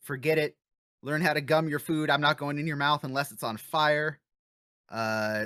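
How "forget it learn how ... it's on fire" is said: plain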